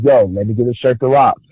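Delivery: plain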